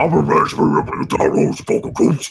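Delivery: put-on rough, creaky orc creature voice. Showing how a line for an animation was recorded: orc voice. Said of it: "I had to literally do it like this".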